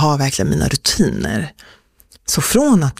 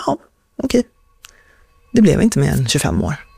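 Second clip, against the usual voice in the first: put-on, completely calm, slower delivery. Speaker recalls seeing their whole life before them, acting out staying completely calm. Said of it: "jag var bara så här helt lugn".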